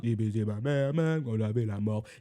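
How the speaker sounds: deep, low voice. Imitating the deep voice in a track for the guys, deep low voice. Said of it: "la voix grave en mode".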